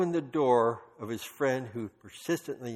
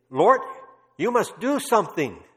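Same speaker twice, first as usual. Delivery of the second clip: put-on bold, high Dutch accent; 8 semitones higher, 8 dB louder than usual. Speaker retelling how Corrie boldly prayed before the Lord, Corrie's Dutch accent. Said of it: "That was her Dutch accent".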